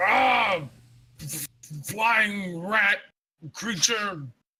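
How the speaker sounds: very slow, high, drawn-out, acted in-character yell. Voicing a character swinging an axe at bats: character yelling. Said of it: "He'll yell".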